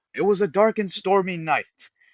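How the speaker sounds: enthusiastic yelling, high pitched and loud. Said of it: "he would be yelling".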